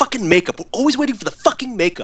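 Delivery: shrill, very high acted yell from the background. Retelling a deleted scene where a director yells offscreen: imitating Quentin Tarantino yelling. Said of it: "you hear Tarantino yelling in the background".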